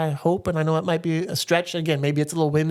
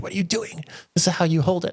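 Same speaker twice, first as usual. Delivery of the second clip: put-on very proper British accent. Recalling a British boss at a first job, imitating a proper British accent. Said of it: "She's very proper British".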